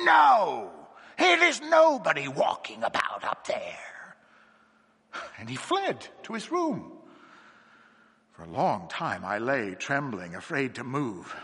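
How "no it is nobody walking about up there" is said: harsh, sharp, rasping, high-pitched, drawn-out cry. A man flatly rejects the narrator's suggestion, in a sharp, rasping cry. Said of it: "he cried in a sharp, rasping voice".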